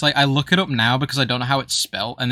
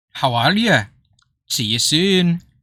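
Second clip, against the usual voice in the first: broad put-on Scottish woman's accent, thick and slow; 3 semitones higher, 3 dB louder than usual. Imitating a scottish robot phone voice when asked: thick scottish lady accent. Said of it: "think of a thick Sc-, Scottish lady accent".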